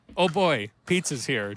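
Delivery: put-on heavily sarcastic tone. Retelling a guitar tech buddy's joke about musicians, retelling a very sarcastic remark. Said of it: "Just like very sarcastic".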